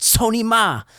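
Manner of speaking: yelling in Mandarin.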